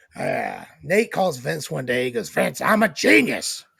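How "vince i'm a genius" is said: loud, rough, creaky, raspy wrestling-promoter voice, pitched up. Acting out a phone call, imitating the caller: Vince McMahon voice. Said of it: "why are you talking like me?".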